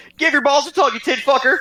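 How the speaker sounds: very high, very loud, shrill shouting. Shouting in character past City Watch guards: Dobby shouting. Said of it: "he shouts in".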